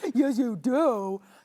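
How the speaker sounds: clumsy, loud, badly done put-on talking-dog voice. Answering for a pet during a chat about bringing pets in, in a bad dog voice. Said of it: "I have a bad dog voice".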